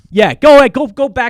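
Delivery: shrill, booming, very high and loud yell. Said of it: "Sorry, I'm yelling".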